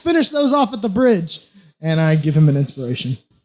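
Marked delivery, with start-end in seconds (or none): 0.0-1.4 yelling, higher pitch. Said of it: "I yell at Max".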